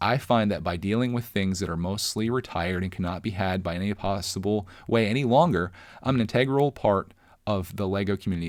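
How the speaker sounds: usual speaking voice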